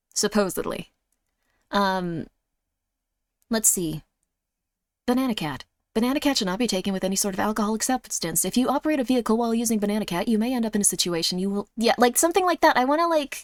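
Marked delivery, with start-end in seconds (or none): 5.1-11.7 rapid-fire, rattled-off fast reading. Speaker shows how they would read a medication ad: very fast drug-ad disclaimer. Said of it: "have you ever wanted to talk really fast?".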